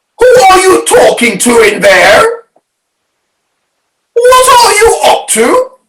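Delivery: put-on very high, shrill, screechy old-woman voice. Reading a story aloud, voicing Grandma calling to George from the next room, screechy voice. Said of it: "came the screechy voice from the next room".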